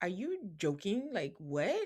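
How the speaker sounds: stunned, incredulous, disbelieving can't-believe-it tone. Retelling how Nick reacted to her seating question: imitating incredulous disbelief. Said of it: "Nick is looking at her incredulously".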